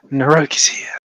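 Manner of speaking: hushed whisper. In a role-play scene as a herd approaches, whispering. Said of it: "I'm gonna whisper".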